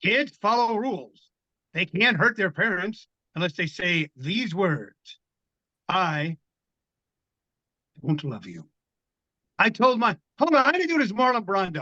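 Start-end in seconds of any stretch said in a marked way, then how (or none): 0.0-8.7 put-on old-school educational health-film narrator voice. Reading a passage aloud in the voice of an old high school vd film. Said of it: "read it as it's like that voice, like that V D thing".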